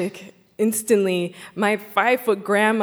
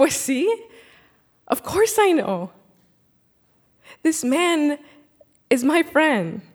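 mock assured, certain tone, pitched up; 6 semitones higher than usual. Retelling grandma's answer about who grandpa is: imitating grandma's confident smiling tone. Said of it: "this big smile on her face and this confident tone in her voice".

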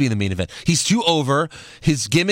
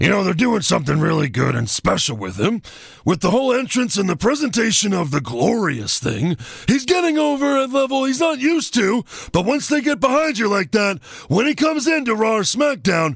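casual delivery, pitched slightly higher; 8 semitones higher than usual. Reading a wrestler's interview quote aloud: Shawn Michaels voice. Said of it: "my Shawn Michaels voice".

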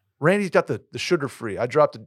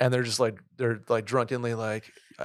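ordinary delivery

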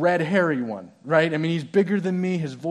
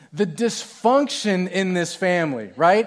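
ordinary delivery

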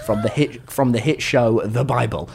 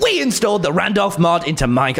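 put-on video intro voice; 5 semitones higher than usual. Asked by the others to do the intro, offering his one line: intro voice. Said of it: "I'll get my intro voice".

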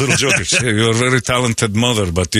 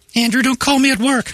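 put-on woman's voice, pitched very high; 14 semitones higher than usual. Playing a mother telling andrew not to call at work: put-on woman's voice. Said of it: "it's with a woman's voice".

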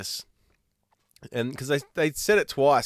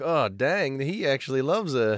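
ordinary delivery

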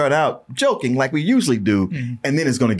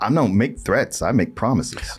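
dead-serious, solemn, grave delivery; 2 semitones lower than usual. Imitating a movie character who never yells: solemn and quiet. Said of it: "very solemn and quiet person where he's like".

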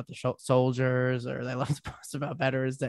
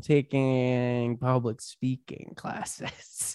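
put-on smug, joking tone; 4 dB quieter than usual. Retelling telling a parent about comedy classes: retelling own smug joking remark. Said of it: "jokingly, like, smugly said".

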